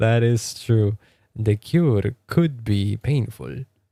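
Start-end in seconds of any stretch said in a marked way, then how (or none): 1.4-3.6 put-on stock, clichéd Spanish accent. Showing the accent people commonly put on, in a stereotypical Spanish accent. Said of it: "That's like the stereotypical Spanish accent".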